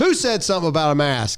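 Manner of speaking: loud, challenging shout with a provoking attitude. Retelling confronting people about masks: retelling a loud shout. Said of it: "as loud as I could".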